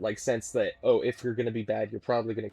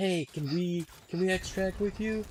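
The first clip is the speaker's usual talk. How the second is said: mock high-pitched yell, carrying over distance; 8 semitones higher than usual. Retelling calling to other players at the extract: retelling a yell. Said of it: "we were just yelling".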